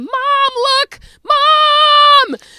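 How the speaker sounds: very high, very loud, shrill, drawn-out scream. Retelling a child running up with a script: imitating a child screaming.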